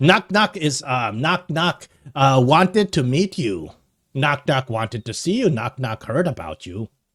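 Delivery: goblin creature character voice. Voicing a goblin introducing itself to the adventuring party, Knock Knock goblin voice. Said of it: "so the goblin comes up to you".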